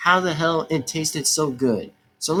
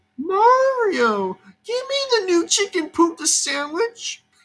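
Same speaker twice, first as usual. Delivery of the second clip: very high, silly, stretched put-on character voice. Imitating a character asking for a new chicken sandwich, in a put-on character voice. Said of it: "I just love doing the little bit of the imitation voice of the character".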